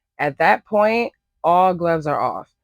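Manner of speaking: emphatic stress on the words "at that point".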